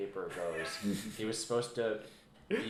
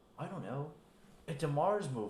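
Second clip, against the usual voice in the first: slow, drawn-out, high affected voice; 6 semitones higher than usual. Imitating a director talking about a Mars movie: Nicolas Cage voice. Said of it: "Sounds like Nicolas Cage".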